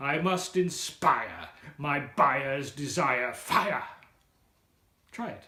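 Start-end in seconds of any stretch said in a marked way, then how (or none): 0.0-3.8 theatrical, slow Shakespearean-style delivery. Demonstrating the buyers line again for listeners, shakespearean delivery. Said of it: "let's try and get a little Shakespearean".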